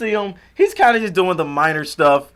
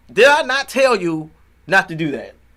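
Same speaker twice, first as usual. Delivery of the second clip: annoyed, angry, pissed-off scolding tone; 3 semitones higher than usual. Retelling a movie scene, quoting a scolding: imitating someone angry. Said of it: "he's very pissed".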